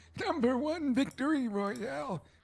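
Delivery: ordinary talk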